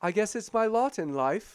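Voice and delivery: mechanical droid voice, acted. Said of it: "he's always in character".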